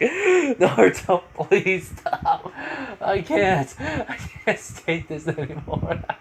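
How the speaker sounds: play-acted high pleading through tears of laughter, very slow. Retelling a scene where a character begs another to stop: imitating laughing to tears. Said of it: "tearing up for laughter so much".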